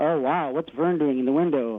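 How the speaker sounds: ordinary delivery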